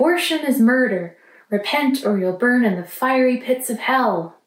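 shout with a light sarcastic edge. Retelling what protesters shouted at clinic gates: sarcastic imitation of a shout. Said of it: "I said that a little sarcastically".

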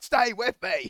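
high, loud, rousing rallying scream. Quoting the man who got him back on his feet; retelling a scream. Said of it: "And then he screams at them".

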